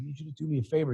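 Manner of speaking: soft whispering. Speaker retelling a call asking the CFO for a favor, retelling a whisper. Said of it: "actually, I'm whispering".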